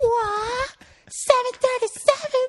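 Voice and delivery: very high, crowd-wide put-on cry, what drawn out long. Retelling the whole warehouse suddenly shouting together, retelling the scream. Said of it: "screamed at the top of their lungs".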